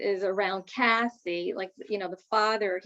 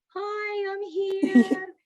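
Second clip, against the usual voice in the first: very high, gentle, sweet, happy voice; 11 semitones higher than usual. Voicing the mother arriving in the same way: imitating a sweet, happy voice. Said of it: "that same type of voice".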